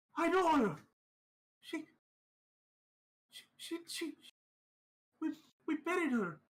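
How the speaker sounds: very high cry of horror. Voicing a panicked man who recognizes the woman: crying out in horror. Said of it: "sort of cries in horror".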